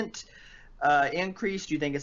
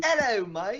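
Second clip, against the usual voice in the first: high fake accent, thrown on; 8 semitones higher than usual. Opening a video, told by another speaker to use one, greeting in a fake accent. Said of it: "Just throw on a fake accent for the whole thing".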